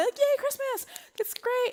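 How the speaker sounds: very high, fake-bright, forced cheerful pep. Retelling trying to pump the kids up: imitating forced cheerfulness. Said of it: "I'm trying to pump them up".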